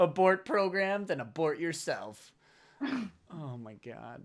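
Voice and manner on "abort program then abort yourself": ordinary talk, nothing marked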